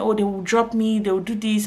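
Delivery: plain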